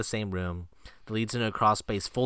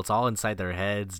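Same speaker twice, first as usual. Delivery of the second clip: normal talking voice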